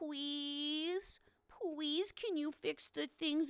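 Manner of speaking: soft, drawn-out puppy-dog pleading voice. Showing how to beg the wife to patch the drawers, mock puppy-dog begging. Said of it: "do the little puppy dog".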